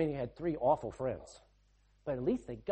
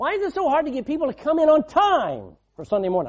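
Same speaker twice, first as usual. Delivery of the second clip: very loud, high-pitched raised voice; 11 semitones higher, 12 dB louder than usual. Speaker putting a pointed question to the listeners, in a raised voice. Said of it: "I'm raising my voice".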